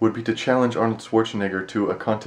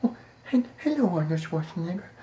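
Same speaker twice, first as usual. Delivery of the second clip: put-on very high, timid, babyish voice with a stammer; 8 semitones higher, 5 dB quieter than usual. Imitating a shy woman meeting Arnold Schwarzenegger: imitating a shy baby voice. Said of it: "she was talking like a baby. Like the baby voice that we make to Freddy".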